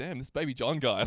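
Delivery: ordinary talk, nothing marked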